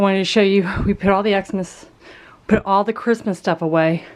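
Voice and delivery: winded, puffing, out-of-breath speech. Showing viewers something in a video, out of breath. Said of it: "I am out of breath".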